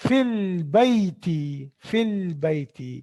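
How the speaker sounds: very slow, careful model pronunciation. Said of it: "Fil madrasati".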